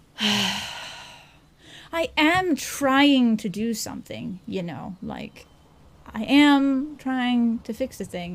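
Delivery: slow, exasperated, fed-up tone. Game master voicing a woman interrupted by a man's request, exasperated. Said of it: "with almost this kind of exasperated".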